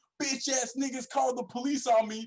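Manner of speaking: very high, shrill, high-pitched yelled rant. Retelling what a guy next door yelled after police came: imitating someone yelling. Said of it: "he's yelling".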